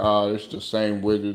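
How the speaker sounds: ordinary talk, nothing marked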